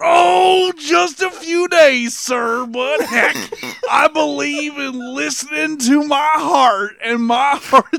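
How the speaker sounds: dumb, hokey, slow, put-on Texas accent. Reading a script line as Beetlejuice posing as a rich Texan: stupid Texas voice. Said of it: "I have to do Beetlejuice doing a stupid Texas voice".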